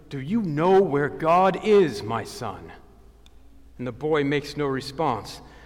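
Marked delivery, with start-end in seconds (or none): 0.1-2.7 stern, severe and grave, slow. Narrator reading a story, the clergyman questions the eight-year-old boy sternly. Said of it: "asks him sternly".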